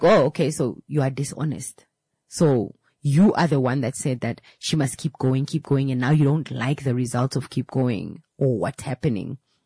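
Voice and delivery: plain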